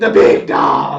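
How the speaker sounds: big loud yelling. Imagining the boss announcing his champion: Vince McMahon voice yelling. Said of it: "imagine that Vince McMahon voice yelling".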